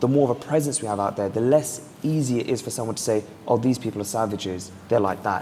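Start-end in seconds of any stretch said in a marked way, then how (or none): none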